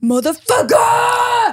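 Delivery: mock scream, very high-pitched screech. Retelling how a man at the gym sounds when he lifts: imitating someone screaming. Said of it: "he's literally just screaming every time he reps".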